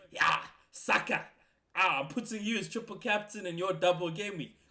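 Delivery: mock smug, self-important, pompous bragging. Imitating the other speaker's past words with a pompous, arrogant tone. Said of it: "with the pompous, arrogant self going".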